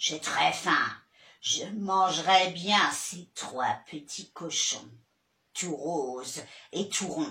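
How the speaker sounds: deep, hungry-sounding voice. Playing the wolf, speaking in a Big Bad Wolf voice.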